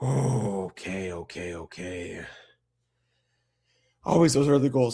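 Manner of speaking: out of breath. Calling the result of an overtime game, out of breath. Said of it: "I gotta catch my breath here".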